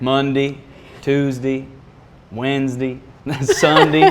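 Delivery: put-on Southern Georgia accent. Asked whether this is their Georgia accent, the speaker shows off a Georgia accent. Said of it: "is that your Georgia accent?".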